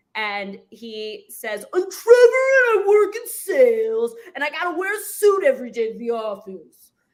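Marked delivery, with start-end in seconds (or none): 1.8-6.9 put-on New York kid's accent, loud and raised. Imitating a friend who talks like a New York kid: imitating a New York kid's accent. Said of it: "he talks like this".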